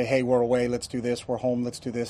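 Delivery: ordinary talk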